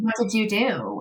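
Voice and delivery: plain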